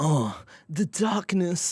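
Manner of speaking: moody emo voice. Voicing the character Andy as asked, making him sound emo. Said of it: "Make Andy sound emo".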